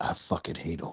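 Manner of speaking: soft whispering. Voicing a character in a game, speaking to another character: whispering in character. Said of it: "Lucian whispers to, to Luna".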